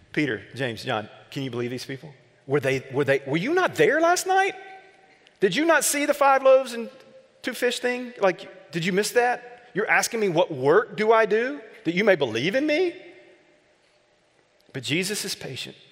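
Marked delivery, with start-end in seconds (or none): 0.2-13.0 heavy, biting, high, swooping sarcastic aside. Acting out what he would say to the crowd if he were Jesus: sarcastic. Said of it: "this would be my great moment of sarcasm".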